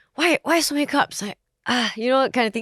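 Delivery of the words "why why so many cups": put-on annoyed, exasperated, irritated, higher-pitched tone. Retelling how a partner first complained about cups: imitating an irritated partner. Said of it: "he reacted in a irritated sort of way".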